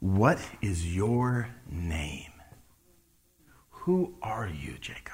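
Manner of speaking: hushed, slow, soft and searching.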